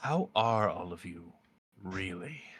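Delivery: tender, gentle, concerned, caring tone. Narrator voices a woman asking her seated guests a question: caring tone. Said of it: "says in a caring tone".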